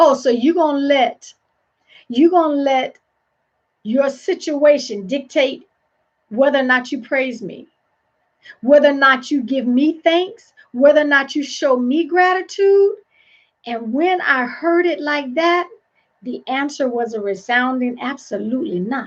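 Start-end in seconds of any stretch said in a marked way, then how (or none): none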